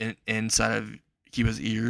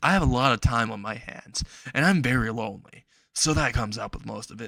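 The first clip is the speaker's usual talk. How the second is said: usual speaking voice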